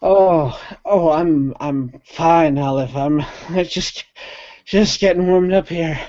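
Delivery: out of breath. Voicing a winded rabbit who insists he is fine: out of breath. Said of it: "he is out of breath".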